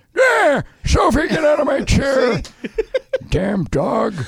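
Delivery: put-on old man voice, very high-pitched. Showing off an old guy voice, talking to the dog Sophie: put-on old man voice. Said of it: "I can do my old guy voice".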